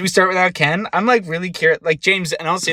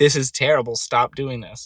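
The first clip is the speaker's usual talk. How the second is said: usual speaking voice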